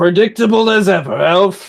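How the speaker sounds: slight grunt, then speech. Hit by a slashing attack, he answers the elf with a slight grunt. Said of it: "he grunts a little bit at that and says".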